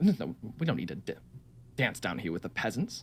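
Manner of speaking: quiet whispering. A game character greets a returning friend and party, whispering. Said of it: "She kind of whispers".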